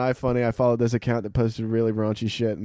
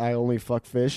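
ordinary talk

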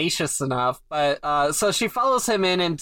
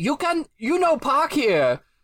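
put-on old man character voice; 9 semitones higher than usual. Retelling a man knocking on the window: imitating stereotypical old chinese man. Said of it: "Complete with the voice and everything. ... I'm only doing this voice".

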